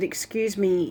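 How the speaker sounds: gently polite tone, not stern or scolding. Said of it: "I didn't wanna be too stern".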